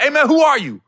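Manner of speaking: high, loud, furious, angry outburst. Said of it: "went left on him quick".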